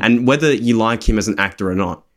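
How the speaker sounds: ordinary talk, nothing marked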